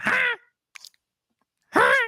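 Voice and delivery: very high, squeaky voice. Retelling a wrestler's flexing taunt: squeaky Scott voice. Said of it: "squeaky voice with it".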